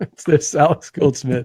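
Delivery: speech broken up by laughter. Mid-discussion, the speaker apologizes to the others while laughing while talking. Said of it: "I'm sorry, I'm laughing".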